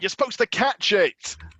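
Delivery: high character voice, calling out. Playing a character who hits someone with a chair: in-character shout. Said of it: "And I'll shout".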